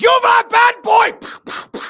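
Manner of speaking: very loud, shrill, long drawn-out bellow. Acting out Krampus arriving to punish a bad child: Krampus voice. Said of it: "And then Krampus, like, shows up with the horns".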